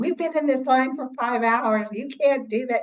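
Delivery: imitated indignant, angry, tantrum-style screaming. Retelling how people in a line reacted to its closing: imitating people screaming. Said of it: "they were just screaming".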